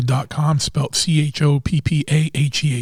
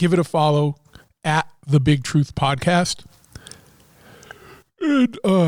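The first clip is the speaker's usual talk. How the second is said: yawning, speaking through a yawn, slower pace. Recording podcast promos first thing in the morning, yawning. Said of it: "sorry, yawning here".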